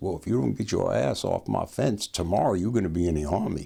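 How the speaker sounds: put-on deep, drawling Texas accent. Retelling the President's warning about getting off his fence, deep Texas drawl. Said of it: "this deep Texas drawl saying".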